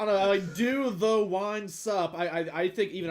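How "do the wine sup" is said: wine sup sounded out very slowly and carefully. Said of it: "I can't butcher that one".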